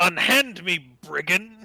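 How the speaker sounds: loud yelling. Voicing a character who yells at a brigand: NPC yelling. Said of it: "Gilturnan yells".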